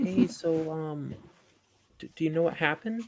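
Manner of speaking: tender, soft, gentle motherly voice. Playing their character, looking at the kid and asking him, in a soft motherly voice. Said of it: "in that like kind of like soft motherly type voice".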